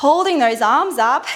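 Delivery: ordinary talk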